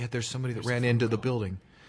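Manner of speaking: put-on whispering. Acting out an aide whispering bad news into the president's ear: imitating a whisper in the ear. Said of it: "and you whisper into his ear".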